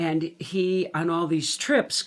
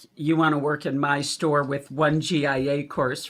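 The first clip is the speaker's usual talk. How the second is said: normal talking voice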